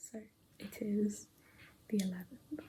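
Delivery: unvoiced, quiet whisper.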